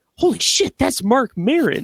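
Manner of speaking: loud, sudden, blurted-out exclaiming. Retelling seeing someone while leaving the movies: imitating own loud remark. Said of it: "I just loudly say".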